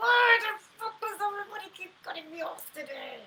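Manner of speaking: very high-pitched, spoken through gritted teeth. Acting out a driver who keeps getting cut off, through gritted teeth. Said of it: "through my gritted teeth".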